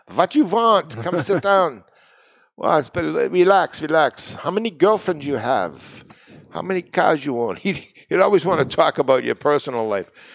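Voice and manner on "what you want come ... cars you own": put-on Yiddish accent, pitched up, small words dropped. Recalling a man you visited while walking a beat, quoting him in a yiddish accent. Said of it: "he was had the Yiddish accent".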